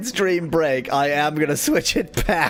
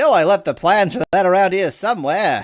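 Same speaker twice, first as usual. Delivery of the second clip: loud, put-on mid-Atlantic transatlantic accent; 3 semitones higher, 5 dB louder than usual. Voicing a game character's line about lost plans: transatlantic accent. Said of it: "given him the, uh, transatlantic accent".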